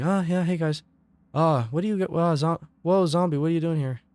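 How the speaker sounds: shy, timid voice kept quiet and hushed. Speaker recreates how they sounded when starting out; imitating own timid voice. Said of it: "I can even recreate it".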